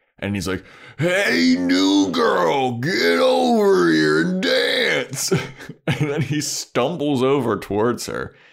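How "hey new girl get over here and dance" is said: obnoxious, loud, rough, very high frat-guy holler. Telling a story, acting out a frat guy calling the new girl over: imitating a loud, obnoxious frat guy. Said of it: "a loud, obnoxious frat guy".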